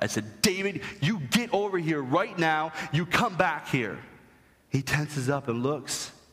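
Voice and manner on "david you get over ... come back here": really loud yelling at a higher pitch. Recalling calling someone back, the speaker reenacts yelling really loud. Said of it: "I yell really loud".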